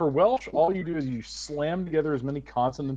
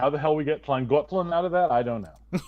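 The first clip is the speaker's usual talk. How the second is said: usual speaking voice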